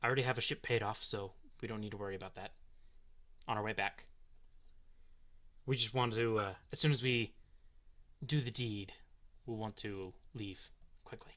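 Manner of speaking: hushed, not whispering. In a game scene, talking with a contact about the deed, speaking hushedly. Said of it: "The delegation. They're gonna be here tonight. / is a man's face. / if this is the contact, / Yeah, so we'll just assume they're not like whispering, but they're speaking hushedly because whispering w".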